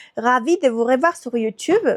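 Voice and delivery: ordinary delivery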